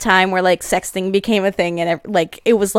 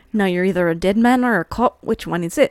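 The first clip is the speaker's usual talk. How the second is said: put-on, imitated Irish accent; 4 dB quieter than usual. Copying a character's line while watching a show: imitating an Irish accent. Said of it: "I can't deal with this accent".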